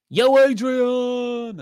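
very high, loud call with the word stretched out. Reading out shout-outs, then doing a Rocky impression. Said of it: "great impression there".

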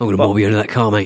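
put-on rough east London tough-guy accent. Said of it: "an East End London thug".

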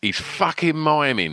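mild shouting call. Retelling a skinhead in the crowd calling out: imitating someone shouting.

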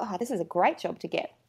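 ordinary talk

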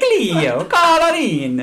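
put-on Jamaican accent. Calling Cleo in, speak in a Jamaican accent. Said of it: "my Jamaican accent".

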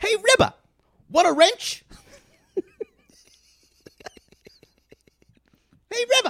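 put-on childlike kid voice. Around a kid, the character puts on a kid voice. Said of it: "He gets kid voice".

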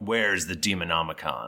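commanding, authoritative, demanding god voice. Game master voicing a figure addressing the players, in a commanding voice. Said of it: "he says to you in this commanding voice".

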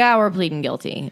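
ordinary delivery

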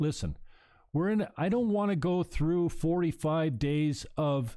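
plain

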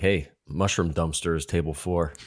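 hushed, whispered voice. Retelling what the lady half-whispered about their table: imitating a half-whisper. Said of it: "I heard her whispering".

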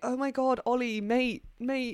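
mock upper-class British accent. Imitating an actor who sounded like every character on Made in Chelsea. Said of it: "sounded like every character on Made in Chelsea".

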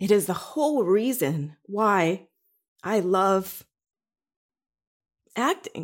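choked-up, emotional, halting, words breaking mid-phrase. Speaker explaining why they love acting, getting emotional. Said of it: "I'm getting emotional right now".

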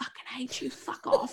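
mock harsh, whispered delivery. Recalling swearing with a baby on them, retelling harsh swearing. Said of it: "trying to harshly swear like".

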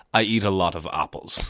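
mock slow, dry, dead-straight expressionless deadpan. Retelling a tv scene where a man answers his doctor, mimicking a deadpan delivery. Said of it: "just really deadpans your man".

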